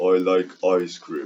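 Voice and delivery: put-on low, deep voice. Recording a line in another person's deep voice: put-on deep voice. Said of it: "I like doing that deep voice he has".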